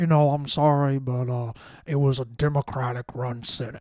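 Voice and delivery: deep, buttery, drawn-out Southern drawl. Predicting how McConnell will shrug off blame, speaker does McConnell's deep buttery Southern drawl. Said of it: "in that deep buttery Southern draw of McConnell".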